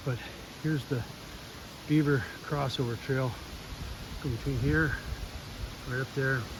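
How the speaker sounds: winded, puffing, breathless, soft delivery. Showing a beaver crossover trail while setting traps, out of breath. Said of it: "pardon me for being out of breath".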